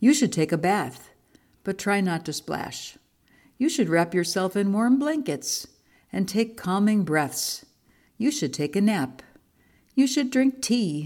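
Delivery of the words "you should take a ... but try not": plain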